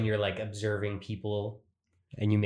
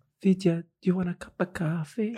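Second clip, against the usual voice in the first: put-on sweetly innocent grandma voice, pitched higher; 9 semitones higher than usual. Retelling a grandmother offering coffee: imitating grandmother, innocent tone. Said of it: "so innocent".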